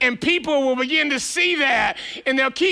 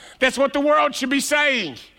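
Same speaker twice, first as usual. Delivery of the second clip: ordinary delivery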